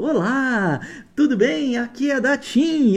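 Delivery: very slow, high robotic recording voice, "Olá" stretched. Speaker mimics an annoying automated phone call, robotic telemarketing voice. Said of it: "aquela vozinha lá, um robozinho".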